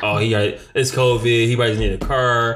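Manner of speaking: normal talking voice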